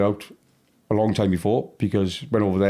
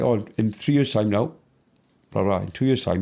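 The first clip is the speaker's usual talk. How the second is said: plain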